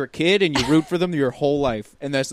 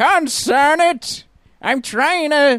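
put-on very high, loud old prospector voice; 12 semitones higher, 5 dB louder than usual. Mocking an actor's fake old lady voice, imitating his old prospector voice. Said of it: "he got confused and went with old prospector".

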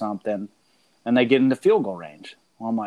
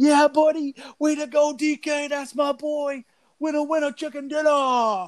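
very high, jubilant, excited screaming cheer. Retelling watching DK run for the end zone, he reenacts his screaming. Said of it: "I start screaming".

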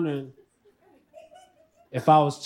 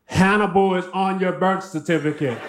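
ordinary talk, nothing marked

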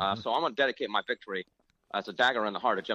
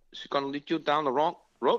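raised-pitch female voice; 5 semitones higher than usual. Asked to do it as an impression, retell your mom's advice to you in an impression of his mom. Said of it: "you got to do it as an impression of your mom".

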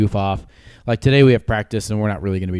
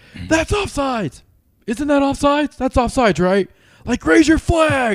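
mock very high, insistent yelling. Recounting a guy who didn't know the rules, retelling him yelling at the referee. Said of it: "he was like yelling at the referee".

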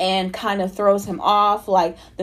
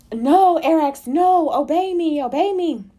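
very slow, high, stretched-out screaming; 8 semitones higher than usual. Recounting the fight, speaker voices Luke screaming at Arax, imitating Luke screaming. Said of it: "you can hear Luke screaming like".

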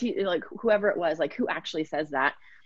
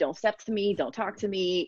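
confrontational, challenging, in-your-face stand-off tone; 2 semitones higher than usual. Imitating a client's talk-back voice: imitating a challenging talk-back voice. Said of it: "very challenging".

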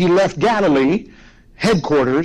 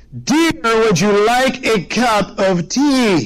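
mock very slow, patient, high, drawn-out voice; 5 semitones higher than usual. Telling a story, a husband repeats his question to his wife: retelling an even louder call. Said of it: "in an even louder voice".

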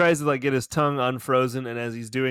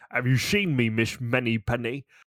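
thick, over-the-top, badly put-on Scottish accent. Doing a Sean Connery attempt while watching, Sean Connery impression. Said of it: "All of the bad Scottish stays".

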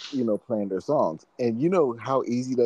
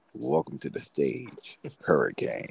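hushed, smooth, low, breathy late-night DJ voice; 5 semitones lower, 4 dB quieter than usual. Retelling how they welcomed someone to the stage, in a Quiet Storm voice. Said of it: "use my Quiet Storm voice".

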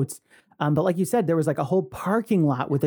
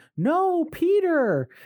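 scream, much higher pitch; 12 semitones higher than usual. Recalling seeing Hook as a very young kid, retelling a scream at the screen. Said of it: "I screamed".

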